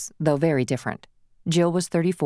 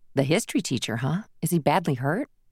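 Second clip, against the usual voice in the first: usual speaking voice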